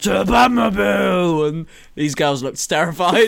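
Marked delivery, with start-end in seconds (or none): 0.0-1.5 put-on sloppy, rough, creaky drunken shout. Retelling a drunk guy stumbling out past some girls, imitating a drunken shout. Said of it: "He's stumbling out".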